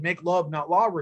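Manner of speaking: plain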